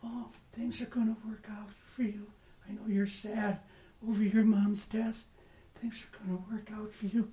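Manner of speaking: very quiet, soft, hushed, soothing voice, quick. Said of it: "I got a soft little voice".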